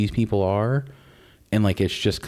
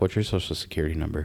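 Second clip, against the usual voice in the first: put-on deadpan, lower and quieter; 5 semitones lower, 6 dB quieter than usual. Retelling an interviewer's question to a celebrity guest: imitating a deadpan interviewer. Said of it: "she's very deadpan, very serious".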